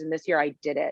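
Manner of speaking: put-on sobbing voice. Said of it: "she was, like, sobbing".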